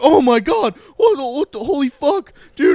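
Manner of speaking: mock mind-blown outburst, very high, loud, swooping. Retelling a friend's reaction on recognizing him: imitating a friend losing his mind. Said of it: "losing his mind".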